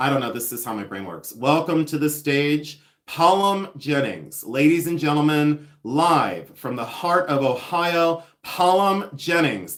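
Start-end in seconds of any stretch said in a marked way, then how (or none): 1.3-9.8 slow, drawn-out stage emcee announcer voice. Pretending to announce a new drag name on stage: stage announcer introducing a drag act. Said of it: "Imagine, like, strobe lights".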